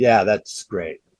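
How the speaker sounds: dry, flat, expressionless deadpan. Retelling a collaborator's reply to a joke cover: imitating Buzz's deadpan. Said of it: "That deadpan way that Buzz can do".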